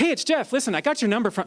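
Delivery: eager, chummy, super excited and friendly. Showing how to greet someone properly: super excited, like a friend. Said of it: "you have to be super excited like they were my friend".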